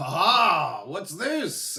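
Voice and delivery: laughing pirate voice, drawn-out high "ha". A narrator voices a pirate who tosses a player aside, laughing. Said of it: "you hear him laugh".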